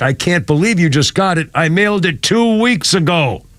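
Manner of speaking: normal talking voice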